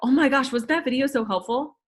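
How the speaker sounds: gushing, relentlessly positive, upbeat, emphatic cheerful tone. Explaining what Kim does when she praises things, imitating Kim's upbeat emphasis. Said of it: "Emphasis on the video being helpful, positive".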